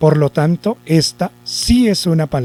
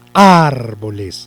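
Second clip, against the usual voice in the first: first syllable ar of árboles stressed; 5 semitones lower than usual. Spanish stress lesson, putting the accent of árboles on ar: stress on first syllable ar. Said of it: "si llevara el acento en ar, yo diría".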